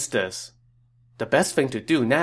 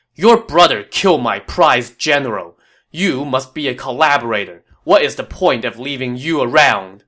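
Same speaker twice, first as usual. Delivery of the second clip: furious, irate, raised voice; 6 dB louder than usual. Yuan Shao, pointing at Liu Bei, accuses him, irate. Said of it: "An irate Yuan Shao pointed at Liu Bei and said".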